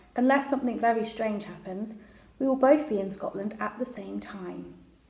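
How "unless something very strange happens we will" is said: usual speaking voice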